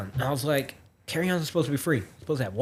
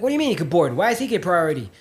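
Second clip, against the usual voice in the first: loud, furious, demanding outburst in woman's voice; 7 semitones higher than usual. Retelling a boarding dispute, voicing the woman who was there first: imitating a furious woman. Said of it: "pissed off as hell".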